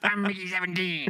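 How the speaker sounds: very high-pitched character voice. Showing someone which voice they should do, in a Mickey Seventeen voice. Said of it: "You should do his Mickey seventeen voice".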